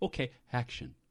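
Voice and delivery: laid-back, very quiet whispered call. Describing a laid-back director who doesn't yell action: whispering like Clint. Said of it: "he kind of whispers it".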